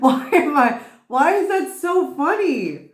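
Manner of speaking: words broken up by hard, high, loud laughter. Reacting to a funny line during a reading: laughing hard while talking. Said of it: "I don't know why I'm laughing so hard".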